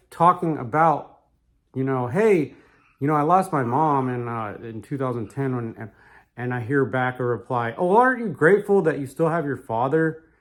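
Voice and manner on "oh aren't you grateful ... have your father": mock patronizing, superior, condescending tone. Retelling a reply heard after mentioning a lost mom: imitating a condescending tone. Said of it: "condescending attitude type way".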